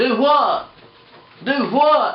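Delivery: very high, very loud, slow Alabama drawl. Imitating people in alabama talking: alabama accent impression. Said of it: "they just talk like this the whole time".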